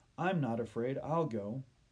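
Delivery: ordinary delivery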